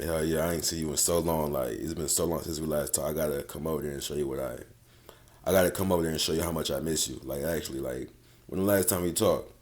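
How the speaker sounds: very soft, hushed, alluring voice. Showing how to talk in a random voice note: enticing voice-note voice. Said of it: "let's say I just start talking like".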